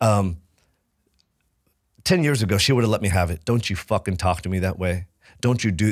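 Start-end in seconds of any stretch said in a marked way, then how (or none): none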